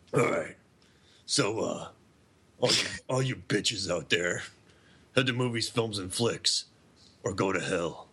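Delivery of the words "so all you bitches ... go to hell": wrestler voice, pitched much lower. Co-host is asked to read the show's plugs in that voice, R-rated wrestler voice. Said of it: "You sound like an R-rated WWE wrestler".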